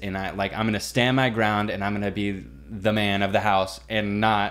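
ordinary delivery

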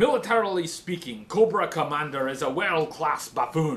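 loud, shouted Scottish villain voice. Someone has asked for your Destro impression, so perform it for them as a shouted Destro impression. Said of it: "can you shout with your Destro impression".

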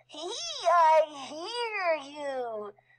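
squealing bat voice, drawn-out "I". Bad Egg the bat hunts Lady Nell and Augustus in the dark: Bad Egg squealing. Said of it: "squeals Bad Egg".

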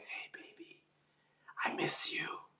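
very quiet, soft, breathy, seductive ASMR whisper. Joking about ASMR videos that whisper to men: mock ASMR whisper. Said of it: "A whispering, whispering to men, like".

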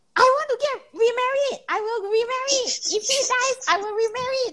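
very high, shrill, loud outburst shout. Retelling how a friend stood in a garden path and shouted: imitating a friend shouting.

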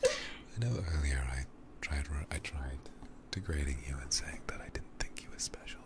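tender, unvoiced, ASMR-style whisper.

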